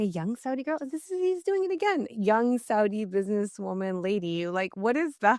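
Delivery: irritated, incredulous tone.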